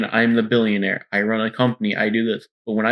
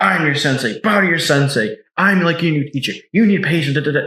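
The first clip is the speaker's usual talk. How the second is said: high, exasperated, lecturing rant with temper lost; 5 semitones higher, 3 dB louder than usual. Retelling a comic scene of a father scolding his son: imitating Batman losing his temper. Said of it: "Batman just, like, crashes out at Damian".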